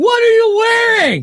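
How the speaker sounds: shouted sexy talk, high, booming, super loud. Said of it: "so I had to be super loud".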